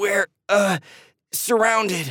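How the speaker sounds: trembling, shaky voice. A kid creeping toward the lake hears strange noises all around; shaky voice. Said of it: "Andy narrated with a shaky voice".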